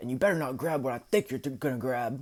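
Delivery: insistent, pressing tone. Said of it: "And he says".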